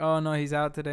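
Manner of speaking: normal talking voice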